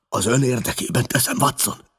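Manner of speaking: raspy hoarse voice. Narrator reads a man lying ill, answering Watson: hoarse. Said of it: "tette hozzá rekedten".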